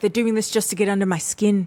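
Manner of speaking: put-on South African accent. Retelling what a contestant said about the pair: imitating a South African accent. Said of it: "I guess that's a South African accent".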